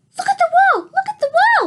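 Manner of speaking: tiny, very high, rushed, squeaky peeping voice. The narrator cries out to a man rushing to the projector, squeaky hamster-like voice. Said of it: "I squeaked".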